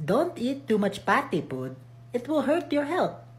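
soft, high put-on Filipino accent. Repeating the same line after a Western-accent version, Filipino accent. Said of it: "Filipino accent".

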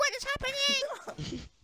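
very high, slow panicked mock scream. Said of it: "some random woman screaming".

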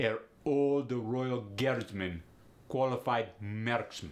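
demonstrated put-on Russian accent. Teaching learners the accent, the speaker says the example phrase in a russian accent demo. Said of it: "when you're learning the Russian accent".

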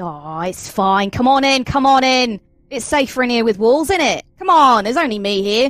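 put-on Australian accent. Voicing a character inviting others inside: Australian accent. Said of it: "going back to Australian again".

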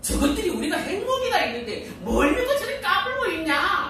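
high, laughing, mocking sneer. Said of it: "이럴지도 몰라요".

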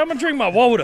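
frog puppet character voice. Voicing someone's inner thoughts for a laugh, in a Kermit voice. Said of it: "I'm Gurr's inner Kermit".

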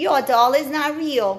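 very loud, taunting, teasing voice. Reading a character who runs up to the narrator, in a teasing voice. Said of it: "in a teasing voice and said".

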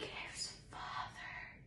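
under the breath. Martine, watching a man soothe an elephant, breathed. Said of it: "Martine breathed".

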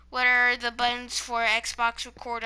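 ordinary talk, nothing marked

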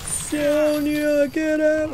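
mock slow-motion yell, high and drawn out. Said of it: "yelling in slow motion".

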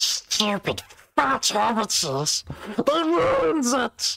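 very high, loud, shrill, swooping creature voice. Speaking to viewers who asked for Smeagol, loud Smeagol impression. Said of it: "I can do a decent Smeagol".

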